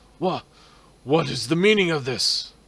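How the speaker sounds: startled high outburst. Describing the room the players enter, voice the character: startled Baron Vargas voice. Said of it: "you see a startled Baron Vargas".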